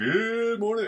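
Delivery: broadcast announcer voice. Host greets his listeners at the start of his talk; radio announcer voice. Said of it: "Almost breaking out a radio announcer voice".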